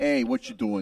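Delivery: put-on New Jersey accent. Asked to do the accent, doing a new jersey accent. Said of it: "can you do the accent for me? ... Jersey".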